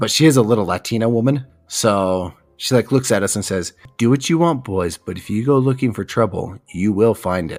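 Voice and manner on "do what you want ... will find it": put-on ominous, foreboding voice. Retelling a friend's mom's warning before a night walk: imitating an ominous warning.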